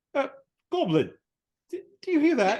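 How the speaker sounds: very high, stammering halfling voice. Voicing a halfling hearing ghost noises: voicing a halfling. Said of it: "Then they're kinda, like, looking around, like".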